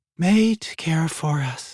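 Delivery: sleepy, high, drawn-out, half-asleep drawl. Narrating a story, reading the dragon's words: sleepy murmur. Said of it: "her dragon murmured in a sleepy voice".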